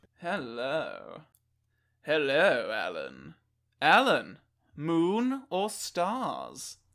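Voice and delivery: deep, low, swooping, very slow drawl. Playing the Sorting Hat for a friend: Leslie Phillips impression. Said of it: "have you ever heard Leslie Phillips' voice?".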